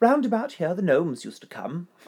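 put-on high old English woman voice. Host quoting Elsie from a recorded conversation, in an old English woman voice. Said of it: "That's my old English woman voice".

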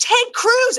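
furious, exasperated angry outburst, very high pitch. Retelling a reply to a brother who suggested moving to Austin: imitating own angry outburst. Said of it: "I got so angry".

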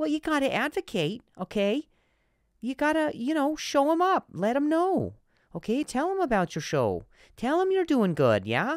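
high, way up, put-on Wisconsin accent. The speaker announces a character and performs it with a Wisconsin accent character. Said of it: "This is now a character I'm doing in a Wisconsin accent".

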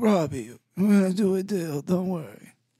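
drawn out, pitched way up. Imitating a team manager talking to a player. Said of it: "you just sound like the Godfather".

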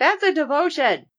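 high-pitched yelling. Retelling a character's reply about a nickname: imitating a yell. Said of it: "She yells back".

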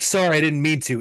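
irritated, grudging tone. Retelling a contestant's apology after his tantrum: imitating Jake angrily.

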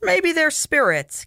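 delighted happy cry, pitched very high. Cannon answers a woman who senses hostile eyes on them, crying happily. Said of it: "Cannon cried happily".

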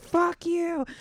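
put-on very high, screeching, screaming yell. Retelling being walked out of a store: imitating her own screaming. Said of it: "I'm screaming out the door like".

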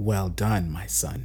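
cold, icy and wicked voice. A dark fairy speaks to her exhausted son, in a wicked, cold voice. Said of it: "a wicked voice said, with her cold tone".

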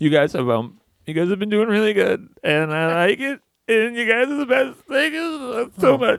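mock ugly crying. Co-host mocking another getting choked up while thanking supporters: mock ugly crying. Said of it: "What an ugly cry".

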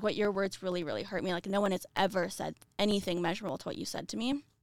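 ordinary talk, nothing marked

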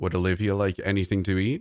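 ordinary delivery

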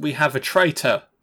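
stiff, robotic line reading. Imitating an actress's line from the film: mocking a stilted, severe line reading. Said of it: "say each word so fucking severely".

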